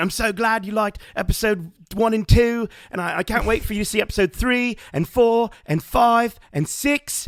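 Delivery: very high, thrilled, excited crowd-pumping yell. Retelling Ewan McGregor on the Star Wars live stage, imitating Ewan McGregor shouting. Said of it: "he was shouting, he's like".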